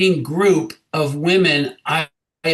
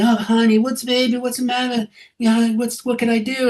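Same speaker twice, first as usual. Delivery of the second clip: mimicked creepy voice, higher; 5 semitones higher than usual. Retelling what a dancer said at a club: imitating a creepy tone. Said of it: "the creepy, mm, thing they".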